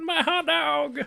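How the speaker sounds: anguished, very high, pained yelp. Retelling a video of a man dropping his hot dog: imitating a pained cry. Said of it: "His voice, it was, like, so much, so much pain".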